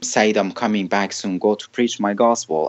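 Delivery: ordinary delivery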